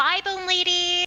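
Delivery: high, bright cheerful calling voice. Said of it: "Whimsy will wave and call out".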